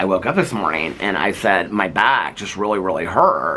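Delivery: ordinary delivery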